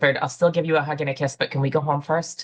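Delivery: mock whispering. Retelling what he whispered on getting off the bus: imitating a whisper. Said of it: "he whispered".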